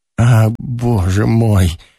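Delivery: low groan of disgust. A man cries out, groaning with disgust. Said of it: "с отвращением простонал Ромашов".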